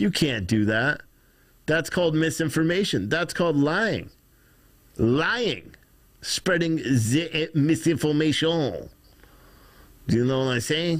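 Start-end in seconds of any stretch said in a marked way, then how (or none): 6.2-8.9 put-on French accent, much slower. Talking about reporting unconfirmed deaths, saying the phrase in a french accent. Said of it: "That's how you would say it with a French accent".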